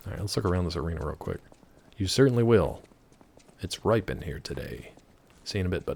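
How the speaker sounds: ordinary delivery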